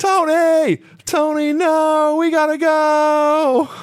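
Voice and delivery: acted, slow, high, drawn-out wailing scream. Retelling a wrestling broadcast's frantic ending: imitating David Crockett screaming. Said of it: "He just screams".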